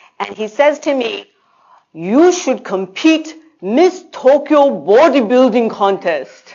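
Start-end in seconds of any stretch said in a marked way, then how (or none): 1.9-6.5 clumsy, bad, put-on Japanese accent. Retelling what a man said after looking the speaker up and down, massacred Japanese accent. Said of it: "I'm going to totally massacre a Japanese accent".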